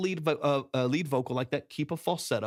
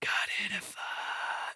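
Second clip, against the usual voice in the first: very slow, breathy whisper; 6 semitones higher, 5 dB quieter than usual. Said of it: "a whisper track".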